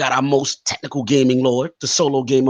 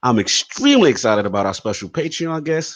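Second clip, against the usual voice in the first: ordinary delivery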